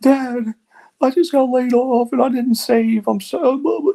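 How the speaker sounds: very high, slow, drawn-out weepy crying voice. Retelling a daughter's call after losing her job: imitating Emmy crying. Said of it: "She called me crying".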